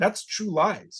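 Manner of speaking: high, slow, snobby, snooty. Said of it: "and I'm like".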